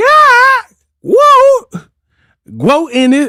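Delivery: very high, very slow, swooping, drawn-out screech. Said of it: "why does she just be screaming".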